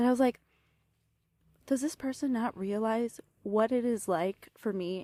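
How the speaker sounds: holding back tears while speaking. Talking to the audience about another person, speaking while holding back tears. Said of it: "force myself to not cry, cry right now talking about this".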